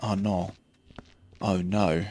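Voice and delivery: "no" drawn out very slowly, Australian "nor" sound. Speaker demonstrates how they say the word no, Australian-sounding. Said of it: "I do sort of put a nor on it".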